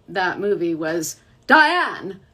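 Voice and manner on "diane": booming, loud one-word shout, full of force. Retelling a voice actor's joke about his only movie line: imitating Wayne Grayson shouting Diane. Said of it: "I always joke that his only line from that".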